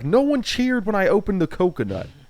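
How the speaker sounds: very high whine with big pitch swoops. Retelling a contestant's strange complaint about the coconut: Andy impression. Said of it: "just the way that he said it".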